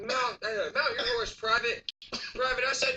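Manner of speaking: high, yelled military drill-style shouting. Retelling a man by a homeless shelter yelling commands, imitating his yelled command. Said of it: "he's just yelling next to him".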